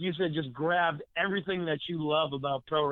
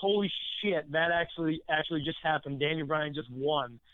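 normal talking voice

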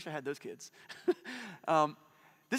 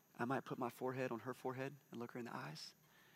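hushed, lowered, very soft voice; 4 semitones lower, 12 dB quieter than usual. Parent showing how they speak to their daughter, in a lowered voice. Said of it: "I might lower my voice like this".

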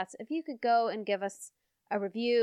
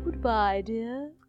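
very formal put-on voice. Trying out voices for a listener, doing a very formal voice. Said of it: "I could do very formal".

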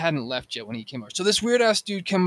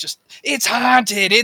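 mock drunken yelling, much higher; 6 semitones higher, 8 dB louder than usual. Telling a story about a friend's belligerent boyfriend on a bridge, retelling a drunk guy's yell. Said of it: "he's running up and down this bridge yelling like".

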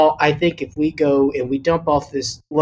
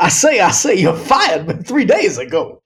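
cartoon rooster voice with swooping, swinging pitch; 4 semitones higher than usual. Joking that the impression turned into a cartoon: Foghorn Leghorn voice. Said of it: "Denzel turned into Foghorn Leghorn".

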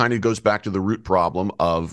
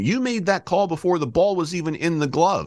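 put-on very high, shrill, accusing yell; 10 semitones higher than usual. Retelling how a coach yelled at the umpire over a call: imitating a coach yelling. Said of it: "he starts yelling at me".

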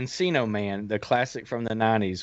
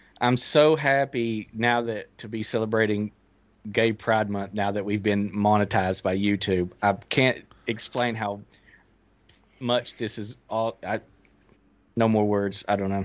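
plain

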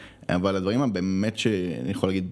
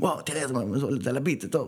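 mock eager, high, excited childlike thrill; 6 semitones higher than usual. Recalling jumping on his chair when a story came together in editing, childlike excitement. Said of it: "אני כזה קופץ על הכיסא בהתרגשות כמו איזה ילד".

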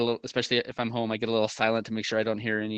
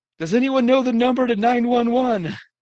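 very high, shrill, frantic, panicked yelling; 13 semitones higher, 8 dB louder than usual. Retelling how a panicking woman yelled while holding her house phone, retelling a panicked yell. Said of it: "and is yelling".

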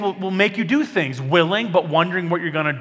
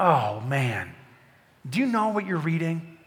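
put-on caring, understanding, empathetic, sympathetic tone; 5 dB quieter than usual. Imagining Philip asking the chariot reader a question, put-on empathetic tone. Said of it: "Maybe he was empathetic".

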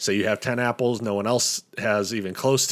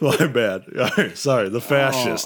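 talking through laughter; 4 dB louder than usual. Apologizing for interrupting a game explanation: laughing while talking. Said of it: "I'm still laughing about Peter Pan".

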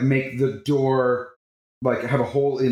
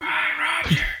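whispered, whispering. Voicing a character saying goodbye through a door: whispering. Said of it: "I just whispered to the door".

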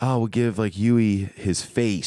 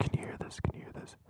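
very quiet, breathy, barely-there whisper. Speaker whispers into the mic so the other person can't hear the answer; whispering. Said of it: "So I'm going to whisper it".

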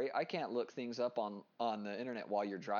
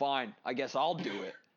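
put-on stern scolding tone; 4 dB louder than usual. Retelling how they answer a device while in the car, mock-scolding like to a child. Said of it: "You're scolding it like a child".

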